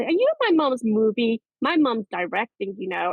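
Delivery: put-on, animated American accent, sing-song. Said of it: "I'm doing an American accent".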